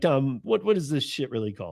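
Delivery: plain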